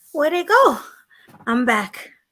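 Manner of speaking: winded, puffing. Rejoining a panel after running back, out of breath. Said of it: "you sound winded".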